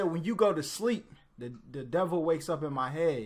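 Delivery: ordinary delivery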